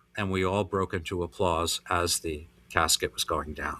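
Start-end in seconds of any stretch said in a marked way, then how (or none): none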